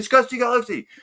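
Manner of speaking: loud, shrill, booming, very high excited scream. Retelling guessing a piano tune at a convention: imitating own screaming. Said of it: "I was up the back screaming".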